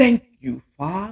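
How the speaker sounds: clumsy, bad put-on preacher-style accent. Imitating pastors who get dramatic while praying: bad imitation of a pastor's accent. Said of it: "I don't do a good imitation of pastors".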